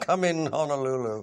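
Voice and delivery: very loud call. Recalling a moment when a camera was left running, retelling a very loud call. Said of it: "in a very loud voice said".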